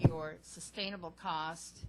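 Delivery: sustainable stressed, said slowly and loudly.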